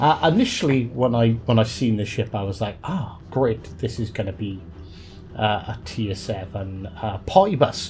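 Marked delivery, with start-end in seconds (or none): none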